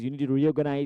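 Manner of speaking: ordinary talk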